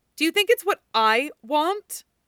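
insistent, thick, tearful voice. A woman answers Frank's protest with her back turned to him, demanding. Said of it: "she demanded".

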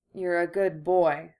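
mumbled, drowsy, half asleep. A woman drifting off to sleep speaks to the one lying against her, in a sleepy mumble. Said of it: "she mumbled, now with her eyes shut and sinking fast".

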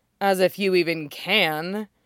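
laughing while speaking, mocking. She answers his question, laughing in his face. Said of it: "Kelly laughs in his face".

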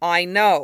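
impatient, short on patience. Lee cuts in while someone explains a woman's parents, impatient. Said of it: "Lee said impatiently".

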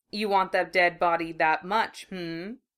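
mocking, taunting tone. The blond taunts Naruto, who leapt for the body, then flits out the door; taunting. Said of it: "the blonde taunted".

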